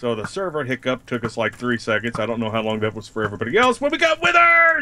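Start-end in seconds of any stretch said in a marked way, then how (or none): 3.8-4.8 shrill, very high, loud screeching scream. Speaker reacting right after a server hiccup, screaming. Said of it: "Stop screaming!".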